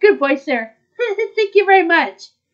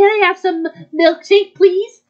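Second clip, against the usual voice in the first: put-on acted cartoon girl voice. Playing a customer ordering food, in a high-pitched Betty Boop voice. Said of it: "you had the high pitch voice".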